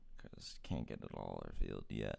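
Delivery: low, creaky growl.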